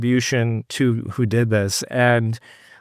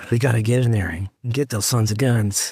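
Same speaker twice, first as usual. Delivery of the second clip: put-on Texas accent. Imitating the president on the axis of evil: George W. Bush Texas accent. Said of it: "In that Texas accent".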